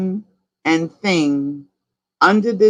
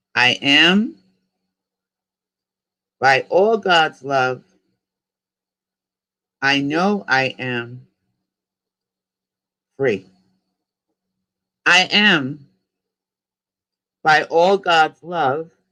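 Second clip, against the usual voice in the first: slowed-down pace, a little slower. Leading listeners in a repeat-after-me affirmation, speaking a little slower. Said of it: "I'm going to go a little bit slower".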